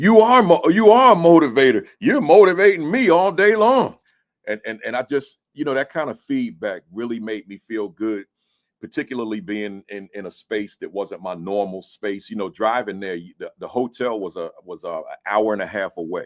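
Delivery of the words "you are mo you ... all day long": loud high-pitched call-out. Retelling what a kindergarten teacher yelled out: imitating someone yelling. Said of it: "he yelled out".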